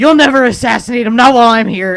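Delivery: very loud, rushed, fast shouting. Narrating a tabletop scene, voicing Lucian Sire leaping from the pantry, yelling. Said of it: "this yelling?".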